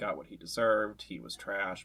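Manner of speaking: ordinary talk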